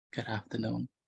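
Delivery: prim, courteous, very polite acted voice. Teasing a student by repeating their greeting: imitating a polite greeting. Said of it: "You sound so polite today".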